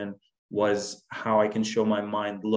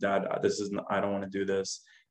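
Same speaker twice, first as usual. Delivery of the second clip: put-on tearful crying voice, quieter; 4 dB quieter than usual. Retelling the first day of kindergarten, pleading with Dad: retelling crying as a child. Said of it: "I'm crying".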